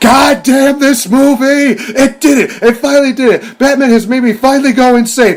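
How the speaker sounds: very high, shrill, loud, frantic, unhinged ranting man. Retelling a reviewer's rampage over a film: Nostalgia Critic going insane. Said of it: "I just see him go absolutely insane".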